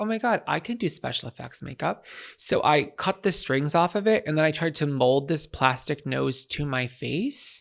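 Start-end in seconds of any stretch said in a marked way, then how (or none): none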